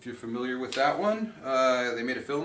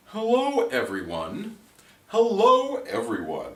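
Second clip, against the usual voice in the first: very slow, swooping, showy, trying-too-hard pretentious delivery; 6 dB louder than usual. Trying out ways to greet a group before asking to join, pretentious greeting. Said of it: "That just sounds pretentious".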